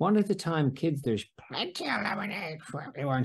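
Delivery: high, horrible, grating, scratchy cartoon rasp. Recounting a Simpsons scene, doing Marge's line in a scratchy Marge Simpson voice. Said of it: "in that horrible, scratchy voice".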